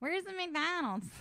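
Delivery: put-on Philadelphia accent. Imitating how a man talks, the speaker does a philly accent impression. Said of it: "he has like kind of a Philly".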